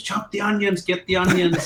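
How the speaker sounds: put-on, high, bossy screamed delivery. Retelling how she screamed orders at him during a game, retelling her screamed orders. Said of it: "she's like screaming to me".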